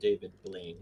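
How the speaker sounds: muttered quietly under the breath. Speaking a line in character during questioning, said under the breath. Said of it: "I say under my breath".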